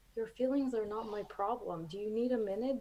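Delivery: kind, gentle, with the utmost kindness. Retelling the husband's answer to a request for comfort: imitating husband's kind tone. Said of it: "he says it with the most, like, kindness".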